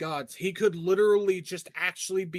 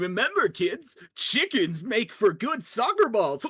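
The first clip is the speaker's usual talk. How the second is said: demented, unhinged, goofy silly voice, higher; 3 semitones higher, 3 dB louder than usual. Putting on a made-up voice for a prank: demented goofy voice. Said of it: "I think that voice perfectly encompasses the asshole".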